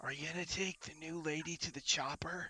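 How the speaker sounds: loud, hushed stage whisper loud enough to carry. The fairy dragon pops out of Theo's garb to ask Theo: Vendelfek's loud whisper. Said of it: "whispers loudly".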